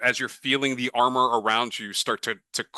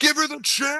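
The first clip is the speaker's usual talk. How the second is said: very high, screaming voice. Voicing Shiner cheering on a fight in an arena: screaming. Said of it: "Shiner screams out".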